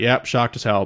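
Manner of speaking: normal talking voice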